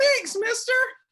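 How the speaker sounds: put-on very high, loud, six-year-old boy voice.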